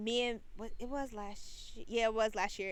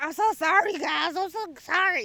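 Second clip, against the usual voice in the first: mock, very loud, high, drawn-out drunken voice; 7 semitones higher, 10 dB louder than usual. Retelling a drunk man on a train apologizing to his friends, imitating a loud drunk apology. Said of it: "he loud as shit talking about how sorry he is for being drunk".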